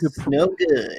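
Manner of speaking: high-pitched cartoon hero voice. Repeating another speaker's line as a cartoon character: Sonic the Hedgehog voice. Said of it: "That's a good Sonic impression".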